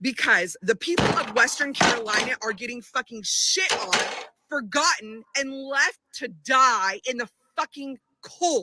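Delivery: seething, furious, spilling-over outburst. Venting after saying how angry one is: furious anger. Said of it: "I am so fucking angry".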